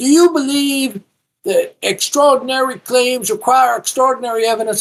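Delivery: put-on very high, squeaky little kid voice. Quoting the man the speaker argued with: mocking squeaky kid voice. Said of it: "the little squeaky voice".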